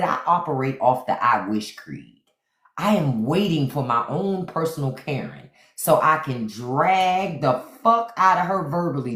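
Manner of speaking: ordinary talk, nothing marked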